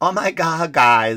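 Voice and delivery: bad put-on woman's voice, very slow. Mocking a truck commercial: horrible woman impression. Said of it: "This is my horrible woman impression".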